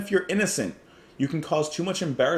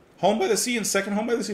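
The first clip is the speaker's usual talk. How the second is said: voice breaking, higher pitch; 8 semitones higher than usual. Listing the album's songs so far, voice cracking. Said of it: "my voice just cracked".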